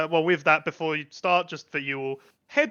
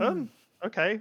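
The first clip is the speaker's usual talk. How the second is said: a little startled, higher and quieter; 6 semitones higher, 4 dB quieter than usual. Voicing Lady Friendship after the players walk off: slightly taken aback. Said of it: "sort of slightly taken aback".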